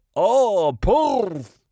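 put-on old-sounding, high, loud cry in Scottish accent.

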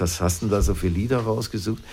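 normal talking voice

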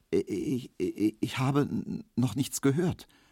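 stammering. Emil Kubinke answers Herr Markowski, who has just shouted at him; stammering. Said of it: "stotterte Emil Kubinke".

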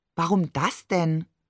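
ordinary delivery, nothing marked

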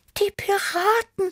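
very high, scared, frightened little meow. A narrator reads Tibi's reaction to the vanished lake, frightened meowing. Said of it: "miaute Tibi erschrocken".

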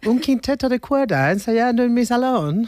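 put-on high-pitched elderly English lady voice.

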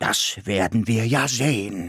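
growled, growling. A creature answers the narrator's defiant words, growling. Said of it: "knurrte es mir".

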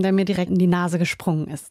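usual speaking voice

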